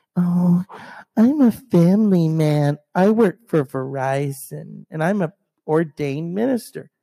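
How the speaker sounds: scornful, slow, drawn-out mocking tone. Mocking a relative who acts like a family man: mocking imitation of a relative. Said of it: "he's trying to look all".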